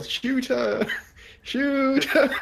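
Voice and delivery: very high, long-stretched, drawn-out shout. A player ends their turn in a game by having their character yell. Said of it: "I'm just gonna yell".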